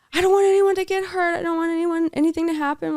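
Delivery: shrill, very high, loud screaming cry. Retelling what she screamed while the speaker tried to calm her: imitating a scream. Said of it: "she would like scream and be like".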